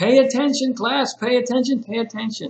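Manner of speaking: scolding teacher voice. Explaining how teachers react when students aren't paying attention, as an upset teacher demanding attention. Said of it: "say pay attention in that way".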